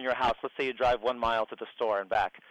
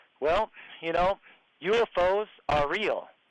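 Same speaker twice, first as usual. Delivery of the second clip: acted, pitched-up, slow and deliberate delivery; 6 semitones higher than usual. Retelling what was said to a man sitting sideways: retelling own loud remark. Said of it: "in a sort of a rou-, loud voice".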